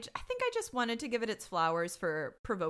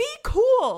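high-pitched, loud, exasperated outburst. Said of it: "And I was like".

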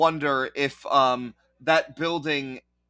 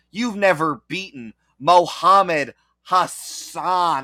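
loud, slow, nasal, throaty, exaggerated Western American accent; 3 semitones higher, 5 dB louder than usual. Acting out a quoted line in an exaggerated American accent. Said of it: "the most Western voice imaginable".

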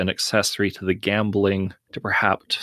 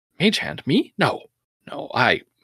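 high, drawn-out, caught-off-guard surprised voice; 6 semitones higher than usual. Voicing a gambler quietly approached by a pit boss: acted surprise. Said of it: "looks a little surprised and says".

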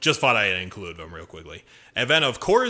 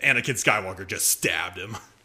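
ordinary talk

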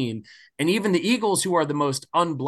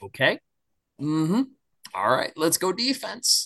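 mock strained, forced calm composure. Retelling watching the Cowboys score in public: imitating forced calm. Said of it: "trying really hard to kinda keep my shit together".

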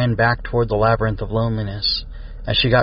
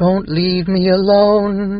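very high, loud, drawn-out monster screech; 9 semitones higher, 5 dB louder than usual. A narrator voices a transformed creature rushing at the group: screeching creature voice. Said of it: "it screeched".

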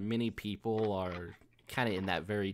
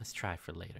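breathy whisper, quieter; 7 dB quieter than usual. Voicing a coworker speaking close behind the listener's neck: whispered close behind. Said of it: "you feel her, her breath, like, on the back of your neck".

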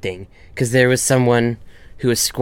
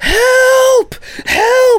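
very high, shrill, loud, stretched-out screaming cries; 6 dB louder than usual. Recalling running onto a bridge, the speaker is retelling screaming for help. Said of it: "I am screaming".

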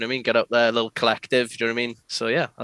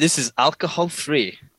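clumsy, badly done fake German accent; 4 semitones higher than usual. Talking about the alcohol-free IPA he's drinking; bad German accent. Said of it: "in my bad German accent".

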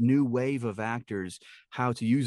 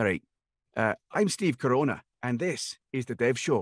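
speaking in a Scottish accent. Choosing an accent, the speaker introduces the show in a scottish accent. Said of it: "Let's go Scottish".

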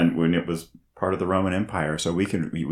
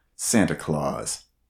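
low, slow trailer voiceover. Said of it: "how do you say a subtitle".

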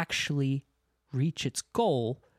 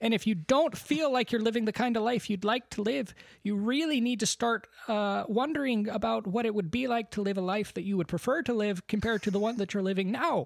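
professorial, lecturing delivery, voice pitched up high; 8 semitones higher than usual. Doing an impression after being asked, talking about alien life: Jordan Peterson impression. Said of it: "your impression of Jordan Peterson".

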